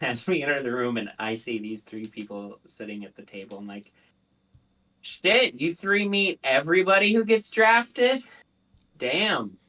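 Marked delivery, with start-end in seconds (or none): 5.0-9.5 very thick sarcastic tone, high and drawn-out. Playing a character meeting three people at a table: very sarcastic. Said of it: "very sarcastically".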